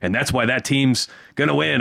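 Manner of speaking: ordinary talk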